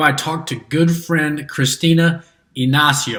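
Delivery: best-attempt put-on Portuguese accent. Introducing a talk with a good friend, saying her name in best attempt Portuguese accent. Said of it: "That's my best Portuguese accent".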